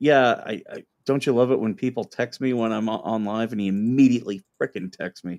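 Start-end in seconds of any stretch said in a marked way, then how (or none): none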